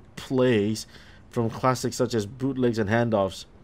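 ordinary delivery

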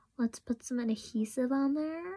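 bad, poor attempt at an American accent. Speaker gluing on nails, saying it the way Americans would, bad American accent. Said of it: "I know that's such a bad American accent".

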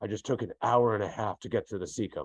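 imitated gruff, mock-gruff tone. Retelling what a grumpy man said when greeted, imitating a gruff manner. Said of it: "in his very gruff manner said".

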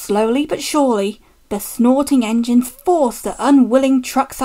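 ordinary delivery

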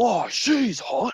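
acted loud, high yell. Retelling how someone kept screaming during the shoot: imitating someone screaming. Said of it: "he would be screaming".

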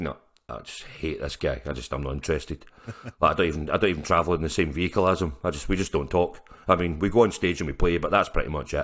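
low, quiet, mock deadpan with hatred. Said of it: "he'll have his deadpan face on".

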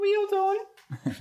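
put-on very high-pitched, slow voice with thick Australian accent.

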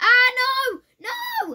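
very high, shrill, very loud, panicked scream. Player being attacked by a red devil in the game, screaming. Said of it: "Stop screaming".

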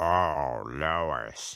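very deep, dropped cowboy voice. Pretending to be a cowboy as asked, saying it again in a deeper voice.

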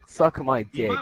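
ordinary talk, nothing marked

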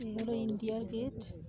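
soft, hushed speaking voice.

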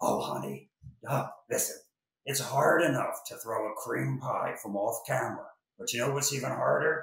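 gravelly, raspy voice like a lifelong smoker. Retelling a woman's reply to the man who threw a pie, in a gravelly smoker's voice. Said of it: "With that gravelly voice from, years of Chesterfields".

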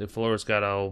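ordinary delivery

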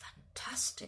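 in a whisper. The headmaster responds to a speaker praising the classics, whispered. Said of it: "whispered the headmaster".

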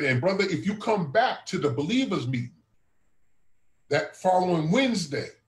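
ordinary talk

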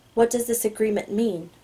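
ordinary delivery

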